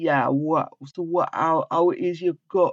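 thick, very strong, put-on Jamaican accent. Imitating a man from the speaker's hometown who talks in a strong Jamaican accent. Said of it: "has a very strong Jamaican accent".

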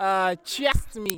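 put-on slow, drawn-out Ghanaian accent. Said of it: "See the way you're pronouncing accent".

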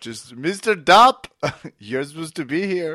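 loud, high, put-on Nigerian accent. Retelling how someone read out the name dopp, the speaker uses a put-on accent. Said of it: "don't ever use that accent again".

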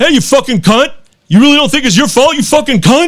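play-acted, loud, high, hostile and aggressive voice. Retelling what a driver shouted out his window: imitating an aggressive driver. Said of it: "this guy was very aggressive".

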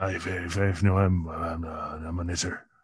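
put-on hushed, slow murmur in a Northern Irish accent. Joking about playing a tough-guy role: Ronald Reagan with Northern Irish accent. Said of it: "a little Ronald Reagan with the Northern Irish accent".

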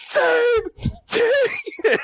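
put-on very high, frantic shout with voice cracking. Retelling how a coach lost his mind at the players: imitating a yell with voice cracking. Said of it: "His voice cracked".

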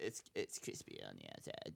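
breathy, half-whispered, slow delivery. Quoting what Brett would say about a turkey: imitating Brett. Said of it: "That's a great impression".

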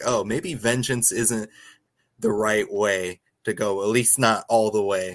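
plain

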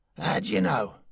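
careless. The watchman answers Mr. Joe Peel's warning about his life; careless.

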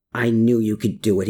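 plain

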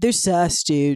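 fake, laid-back surfer-dude accent. Showing how the slang word has to be said, in a put-on surfer accent. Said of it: "you have to say that with like a surfer accent".

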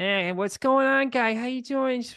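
very high, classic Boston townie suburban guy accent. Describing the voices heard growing up, doing the classic Boston suburban guy. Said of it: "classic Boston suburban".

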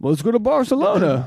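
bad put-on impression. Recalling a trip, speaker imitates the listener's suggestion: bad impression of the listener. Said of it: "that's a bad impression".

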